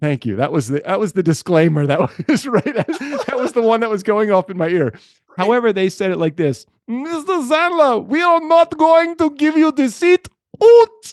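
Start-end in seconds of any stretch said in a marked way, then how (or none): 6.9-11.1 rough, vague put-on German accent, higher, louder, slower. Retelling how the airline's disclaimer about his seat was said, vague german accent. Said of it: "That was vaguely a German accent".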